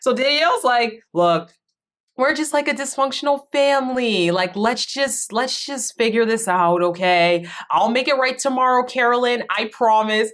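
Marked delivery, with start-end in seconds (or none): 1.1-10.3 mocking, unserious, pitched-up sarcastic tone. Retelling a player's promise to make it right: imitating a sarcastic tone. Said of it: "Every single thing Danielle says sounds so sarcastic".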